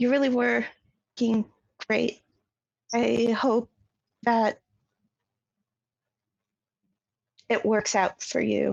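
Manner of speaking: a little sad, sincere, genuinely meant. Voicing a character speaking under her breath: quiet, under her breath. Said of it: "just quietly".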